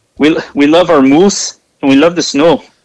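put-on terrible Canadian accent. Imagining angry emails from Canadians about how you talk about their country, bad Canadian accent. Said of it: "These are probably the worst Canadian accents of all time".

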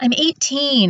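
sudden, sharp, high-pitched snap. Answering her dad's disappointment over the spell: snapping. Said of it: "I snapped".

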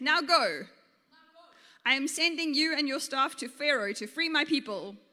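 plain

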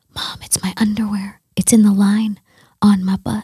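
hushed, confiding whisper under the breath. Retelling what a child leaned over and said to mom: imitating a whisper. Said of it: "like, whispers and he goes".

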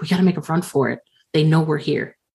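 whispering in a character voice. Voicing a character urging escape to another character: whispering in character. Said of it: "Warren whispers to Brandon".

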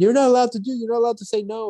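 put-on, shrill, very high screaming rant. Retelling a guy on a plane screaming at another man: retelling a guy screaming. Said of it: "the guy's screaming at him like".

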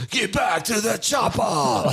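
aggressive action-movie yell, very high and hard. Retelling how a performer sounded live: imitating aggressive Arnold yelling. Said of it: "he sounded like aggressive Arnold".

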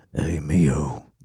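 inner thinking voice, like a passing thought. Imitating the other speaker's thinking voice on the toilet: Sam Elliott voice. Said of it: "it's Sam Elliott's voice when I think".

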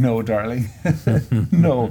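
put-on amused, affectionate, laughing, dismissive tone. Retelling your mother's reply when asked if dad played better, imitating mother laughing. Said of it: "my mother laughing and going".

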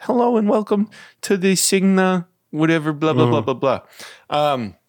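terrible, high-pitched put-on Long Island accent. Retelling a voice heard through mixer static, the speaker does a terrible Long Island accent. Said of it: "that was my terrible Long Island accent".

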